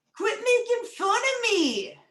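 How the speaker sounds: very high, loud, swooping voice. Doing a string of joke impressions, the speaker does a Rudolph impression. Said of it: "this is my impression of Rudolph the Red-Nosed Reindeer".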